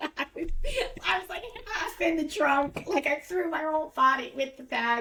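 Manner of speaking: high, bubbling giggling laughter.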